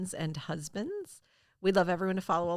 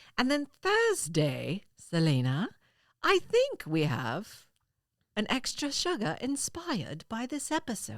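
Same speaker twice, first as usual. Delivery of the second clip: slow, sing-song put-on British newsreader accent; 4 semitones higher than usual. Announcing next week's bonus episode to a co-host: put-on British accent. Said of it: "it only works if I speak with this accent".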